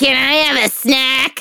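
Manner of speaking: put-on talking doll character voice. Describing a doll named Jasper, in the Jasper doll voice. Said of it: "And Jasper talks like this".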